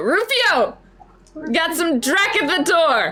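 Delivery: shouting. Voicing a kid holding a gun who calls to Rufio: yelling over the shoulder. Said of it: "just kind of yells over the shoulder".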